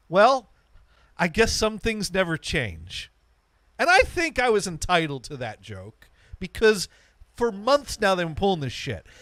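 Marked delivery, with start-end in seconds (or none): 0.1-3.1 sing-song, joking, mock good-natured snark. Retelling a parting remark to a worker, imitating a snarky remark. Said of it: "with a little bit of snark".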